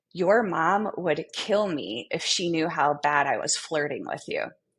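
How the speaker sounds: ordinary talk, nothing marked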